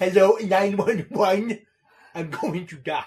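loud, slow, would-be sincere, dead earnest delivery. Imagining him trying to sound sincere: Donkey's comedy voice trying to sound sincere. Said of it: "imagine him trying to sound sincere".

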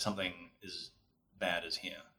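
very soft, hushed, ominous tone.

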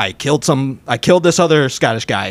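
ordinary talk

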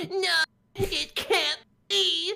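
shrill, booming, creaky, very high, drawn-out wail. Showing a voice used with a friend: Luke Skywalker voice. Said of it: "our Luke Skywalker voice when Darth Vader tells him".

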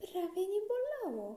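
satisfied, happy tone. A girl speaks to the doctor right after his count of three, pleased. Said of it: "mówi zadowolona [name]".

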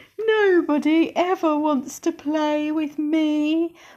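small, high little wail with "me" drawn out. Reading a story aloud, voicing a tiny Tyrannosaurus in a small wailing voice. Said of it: "wailed a little voice".

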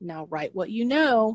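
put-on, patronizing, talking-down lecture voice. Imitating how people say a common piece of advice: imitating a condescending voice. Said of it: "it's said in a condescending voice".

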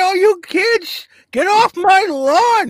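put-on crotchety grumpy old man, very slow, drawn out. Joking with the group about getting older: old man voice. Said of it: "I've been talking like this".

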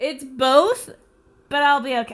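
loud, half crying, half laughing. Asked if they're crying from laughing, the speaker answers crying and laughing. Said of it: "Are you partially crying from laughing?".

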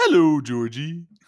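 eerie clown character voice. Taking a turn after being told to try it, doing a Pennywise impression. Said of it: "That's pretty good".

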